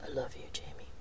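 quiet, low pitch. A man on the phone says this to Jamie, quietly. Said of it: "quietly said".

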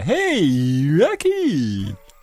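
goofy sing-song moose voice, "hey" stretched, swooping. Speaker recalling an old cartoon with others, doing a Bullwinkle voice. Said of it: "I'm doing a voice that I remember".

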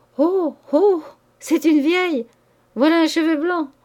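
high, shrill, strident cry of nervous glee. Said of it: "poussa un cri strident de joie nerveuse".

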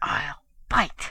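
fierce, close whisper. Trigger, her chin held by the ape, whispers fiercely. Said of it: "Trigger whispered fiercely".

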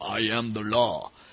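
exaggerated, very slow, each word drawn out. Quoting a cheesy movie one-liner: exaggerated Stallone voice. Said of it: "in his exaggerated Stallone voice".

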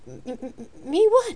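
halting, high-pitched stuttering, stammering. She answers the man's question, stammering. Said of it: "she stammered".

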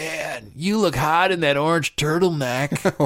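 put-on sloppy, slurring drunk voice. Retelling what a drunk young woman said while walking past: imitating drunk slurring. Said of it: "drunk again, you know, slurring".

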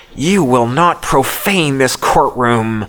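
words hissed out. Narrating the courtroom scene, the hisser speaks to Hugh; hissing. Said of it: "the hisser hisses".

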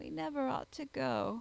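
mumbled, plaintive, sorrowful and regretful. The second of two men asking the narrator the way, mumbling plaintively. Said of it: "mumbled the other plaintively".

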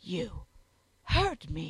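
fierce, loud, swooping angry hiss. A woman springs up from the floor beside a guard, hissing. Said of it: "she hissed".

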